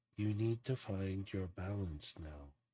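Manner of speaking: soft, pure half-whisper all through. Describing a moment of peace, voicing R's unusual voice: R's half-whispery voice. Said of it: "you just hear this whispery voice".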